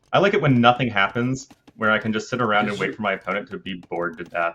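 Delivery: ordinary delivery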